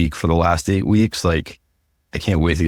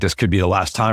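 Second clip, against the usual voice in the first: plain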